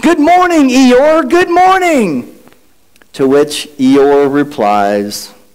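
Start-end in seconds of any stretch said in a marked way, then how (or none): 0.0-2.4 high, cheerful, bright yelled call. Telling the Eeyore story, the narrator has Pooh greet Eeyore, Winnie the Pooh yelling.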